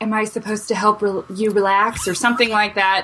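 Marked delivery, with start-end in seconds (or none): 0.0-2.1 put-on coy delivery. Retelling a movie scene, quoting the blonde lady: imitating a coy tone. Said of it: "she's very coyly saying".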